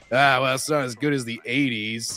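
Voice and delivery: mock dismissive voice. Acting out how the dad would insult his son on each visit: imitating the dad insulting his son. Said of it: "constantly insult him whenever he visits".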